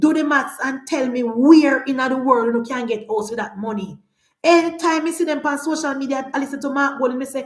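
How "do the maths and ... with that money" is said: ordinary talk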